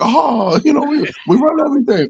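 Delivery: very high, squeaky cartoon character voice. Recalling a South Park episode: Mickey Mouse voice. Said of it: "that episode of South Park with Mickey Mouse when he's like".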